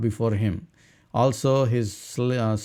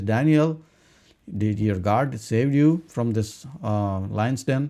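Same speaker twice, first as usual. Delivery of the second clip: ordinary delivery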